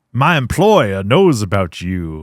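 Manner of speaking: greasy Southern detective voice with drawl. Retelling a film scene, voicing the greasy Southern detective. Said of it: "greasy Southern detective".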